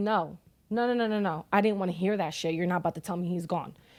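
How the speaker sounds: normal talking voice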